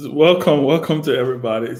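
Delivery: words broken up by laughter. Welcoming everybody to the closing argument while laughing. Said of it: "Sorry, I'm laughing".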